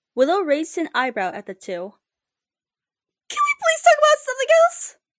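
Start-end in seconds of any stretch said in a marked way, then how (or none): 3.2-4.9 very high, thin, tinny squeak, rushed. Amity, after Willow's remark, squeaked high and tinny. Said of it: "Amity squeaked, her voice gone high and tinny".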